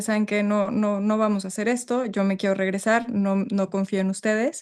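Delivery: ordinary delivery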